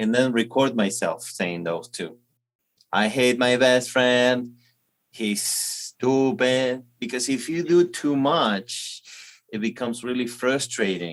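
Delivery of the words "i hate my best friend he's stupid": put-on, very American accent. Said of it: "imitate him with a very American accent".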